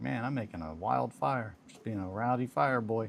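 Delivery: ordinary talk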